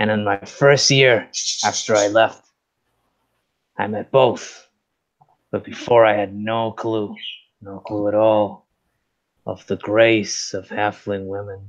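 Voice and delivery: slightly tipsy, liquor-tinged voice. Telling a little story in character: a little liquor in the voice. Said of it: "a little bit of the liquor in my voice".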